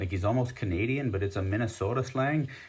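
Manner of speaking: ordinary talk, nothing marked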